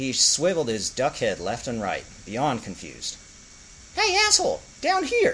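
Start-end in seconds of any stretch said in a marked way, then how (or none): 4.0-5.3 small, tiny, annoyed, very high, irritated voice. Reading a story, a small voice calls up from below to a duck, small, irritated voice. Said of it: "Said the small, irritated voice".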